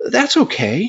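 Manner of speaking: acted very high, almost wounded, slightly hurt tone. Speaker retelling a woman's reply after he declined her offer, retelling an almost hurt tone. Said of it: "in this almost hurt tone of voice".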